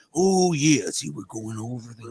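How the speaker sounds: slow, drawn-out wrestling-promo announcer voice. Imitating the flexing wrestler being discussed: Macho Man voice. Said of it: "It's like".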